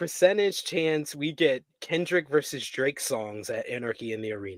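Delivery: ordinary talk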